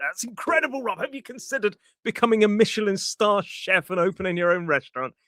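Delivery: high, exaggerated, over-the-top gushing overpraise. Showing how overdone praise of a friend's cooking sounds: over-enthusiastic gushing. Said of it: "So over enthusiasm, like".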